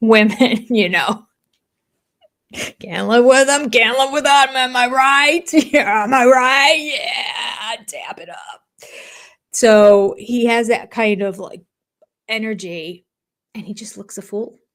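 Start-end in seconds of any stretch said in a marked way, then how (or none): 2.8-8.9 blokey, swaggering, would-be cool big man voice. Imitating Cody talking about silly women: imitating Cody's big man voice. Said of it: "he thinks he's using his big man voice".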